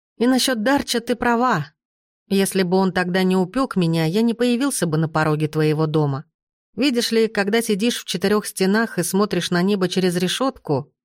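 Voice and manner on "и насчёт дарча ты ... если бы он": ordinary delivery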